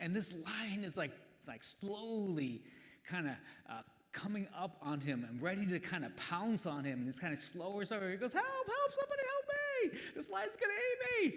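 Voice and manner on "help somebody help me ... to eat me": very high, loud, frantic, panicked screaming. Telling a joke, voicing a man cornered by a lion, retelling a scream for help. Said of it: "he's like screaming and yelling".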